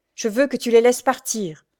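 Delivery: firm, resolute tone. Pierre, facing Jacques, answers him in a firm tone. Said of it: "dit-il d'un ton ferme".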